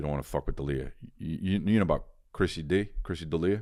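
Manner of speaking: wiseguy gangster tough talk. Imagining what people would say about you as a mobster: imagined mobster crony talking. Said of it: "I can imagine if I was a mobster, people would have stories about me".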